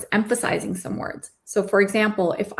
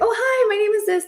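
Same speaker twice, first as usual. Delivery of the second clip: very high-pitched, eager, excited; 14 semitones higher than usual. Showing how people on the opposite side introduce themselves, in an excited junior-sounding tone. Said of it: "That's more junior. It sounds more exciting".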